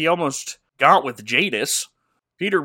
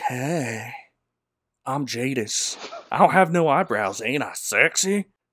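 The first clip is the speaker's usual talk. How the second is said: slow, drawn-out, flirty, vampy, charm-laden delivery; 3 semitones lower, 3 dB quieter than usual. Recapping a movie scene, imitating Jadis the witch tempting Peter. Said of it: "And Jadis is like".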